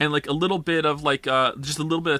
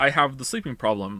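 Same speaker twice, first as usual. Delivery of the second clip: plain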